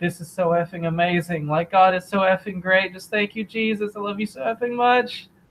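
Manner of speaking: mock crying with joy, overflowing gush, pitched high. Retelling a new convert's words on stage: imitating joyful crying. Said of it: "he's crying and he's, like, you know, really joyful".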